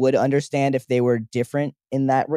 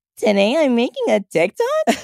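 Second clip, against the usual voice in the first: mocking, high, swooping, drawn-out, annoying narration voice; 11 semitones higher than usual. Retelling how a daughter mimicked her mom's TikTok voice: mocking imitation of an annoying TikTok voice. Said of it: "And she mimics her?".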